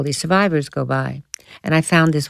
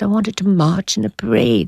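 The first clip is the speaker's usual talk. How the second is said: put-on clumsy, poorly done German accent, pitched up; 5 semitones higher than usual. Retelling a German man's answer about joining the Hitler Youth: poorly done German accent. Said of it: "I'm not doing a German accent well".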